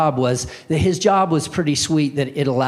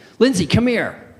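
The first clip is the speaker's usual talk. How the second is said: pressing, urgent, alarmed voice, pitched up; 6 semitones higher than usual. Retelling how a father called his daughter from the tv room: imitating an urgent call. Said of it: "he gets this urgent sound in his voice".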